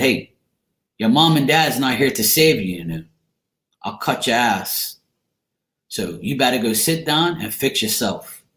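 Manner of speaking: usual speaking voice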